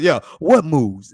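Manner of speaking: loud, pushy, intimidating tough-guy voice. Asking someone what moves they've got; Debo voice. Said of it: "in my Debo voice".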